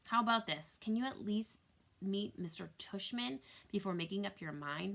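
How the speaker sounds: usual speaking voice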